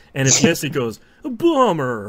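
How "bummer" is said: 80s surfer slang voice, higher and louder. Imitating a game gun's voice when you reload right: totally eighties voice. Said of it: "a totally eighties voice goes".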